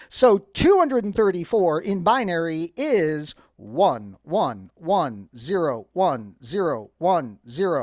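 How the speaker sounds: low, slow robot voice. Explaining a binary conversion and giving the final digits, talking like a robot. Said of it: "I don't know why I'm talking like a robot".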